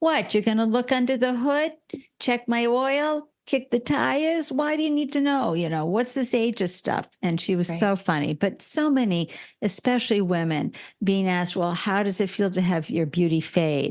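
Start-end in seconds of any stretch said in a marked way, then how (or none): 0.0-7.1 put-on Staten Island or Brooklyn New York accent. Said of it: "Staten Island type accent or Brooklyn accent going".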